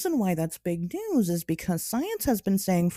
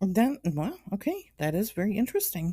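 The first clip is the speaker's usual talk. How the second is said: polite customer service voice, sounding interested. Reacting to news just shared, in a customer service voice. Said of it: "got my customer service voice on".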